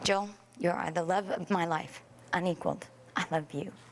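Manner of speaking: tearful, choked-up voice, cracking and breaking. Saying wedding vows to Joel, voice breaking. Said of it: "[ Voice breaking ]".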